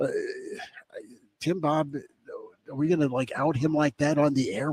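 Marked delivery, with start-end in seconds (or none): 1.4-4.7 hushed, quieter whispering voice. Asking a co-host about a friend's drink, whispering. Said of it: "We're kinda whispering".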